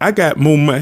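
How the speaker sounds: plain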